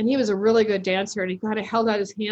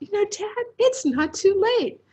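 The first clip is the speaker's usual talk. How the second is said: slow, pitched-up, tender, loving excitement; 10 semitones higher than usual. Retelling what the speaker said to their dad, retelling loving excitement. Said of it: "with like a lot of love and excitement".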